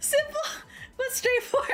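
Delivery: very high, stifled laugh breaking through. Reading a small business owner's letter aloud, holding back a laugh. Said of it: "I can't keep I can't keep a fucking straight face".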